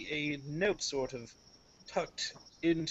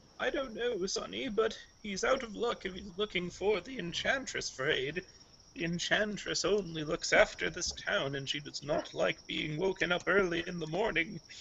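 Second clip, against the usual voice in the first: put-on old-lady character voice, elderly woman; 3 semitones higher than usual. Voicing an old lady with a cane answering the party: old lady voice. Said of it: "she'll just sort of raise her cane and go".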